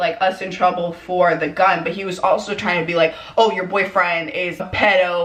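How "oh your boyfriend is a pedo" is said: ordinary delivery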